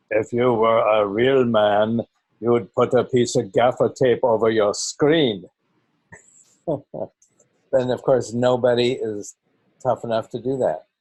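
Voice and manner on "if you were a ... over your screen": theatrical, exaggerated Austrian accent. Delivering his usual line: Arnold Schwarzenegger Austrian accent. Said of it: "I try and say it with the Arnold Schwarzenegger uh, theatrical voice".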